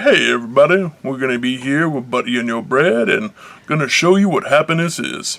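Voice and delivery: put-on, deliberately dropped, very low deep voice. Trying out a voice for a greeting to everybody, put-on deeper voice. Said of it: "I'm trying to use a deeper voice".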